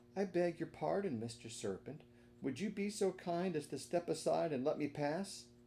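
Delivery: gentle, sweet, soothing voice, pitched high. Narrator reading a character's polite request to the serpent, sweet, soothing voice. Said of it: "said in a sweet, soothing voice".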